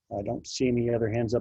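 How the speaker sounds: normal talking voice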